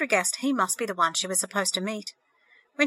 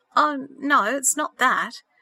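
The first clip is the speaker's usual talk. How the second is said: very slow, uneasy, uncomfortable mumble; 4 semitones higher, 4 dB louder than usual. A man answers Sandra's question: mumbled uncomfortably. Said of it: "he mumbled uncomfortably".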